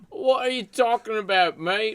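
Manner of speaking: bad fake British accent, very high and very loud. Answering a friend who says his British impersonation is bad, in a put-on British accent. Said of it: "My British accent is a ten".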